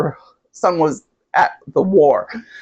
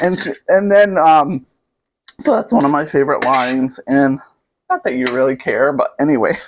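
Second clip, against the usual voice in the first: ordinary talk, nothing marked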